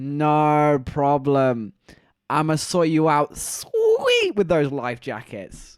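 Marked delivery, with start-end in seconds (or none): none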